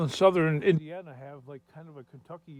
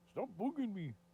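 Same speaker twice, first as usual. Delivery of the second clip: failed attempt at Irish accent, pitched up; 6 semitones higher, 9 dB quieter than usual. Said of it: "That's my attempt. At a, at a [name] accent".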